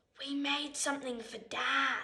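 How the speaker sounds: secretive, hushed stage half-whisper. Narrator reads a girl telling her grandparents a secret, half-whispering. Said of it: "whispers Olivia".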